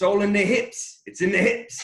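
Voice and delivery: put-on very high, heavy, loud South African accent. Quote a fellow shareholder at a content video shoot, imitating a thick South African accent. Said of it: "in his thick South African accent".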